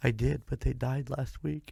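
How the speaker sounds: mock tearful, fake sobbing through the words. Retelling a phone call, answering the lady on the phone, with fake sobbing. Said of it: "I'm sobbing to this lady on the phone".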